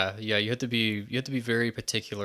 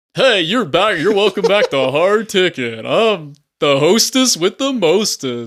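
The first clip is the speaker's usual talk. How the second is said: very loud, pitched-up voice; 9 semitones higher, 12 dB louder than usual. Answering with an impression of a co-host: imitating Jeff. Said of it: "I can do a Jeff impression".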